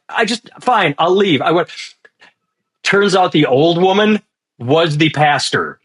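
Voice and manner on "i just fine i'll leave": upset, pitched-up, put-on composure slipping a little. Recounting a woman in a viral clip losing her composure, imitating someone losing composure. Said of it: "she loses her emotions a little bit".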